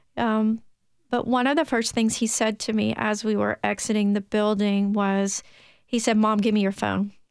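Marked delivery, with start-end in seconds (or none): 6.2-7.1 put-on stern voice. Retelling a child's demand outside the building: imitating a stern demand. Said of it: "very sternly".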